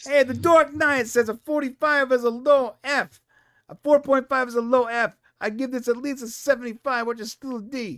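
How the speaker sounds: high-pitched New York accent. Co-host chiming in on the show, talking in a New Yorker accent. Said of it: "I don't know why I'm talking like a New Yorker".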